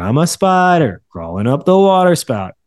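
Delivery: gravelly baritone, sing-song. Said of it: "It has a little bit of sing-songiness to it".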